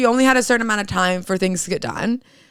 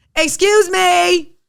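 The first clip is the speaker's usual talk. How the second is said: mock irate shouting, pitched up; 9 semitones higher, 3 dB louder than usual. Retelling how mom went off at a woman who was cutting: retelling mom yelling. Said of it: "starts yelling".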